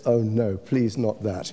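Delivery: normal talking voice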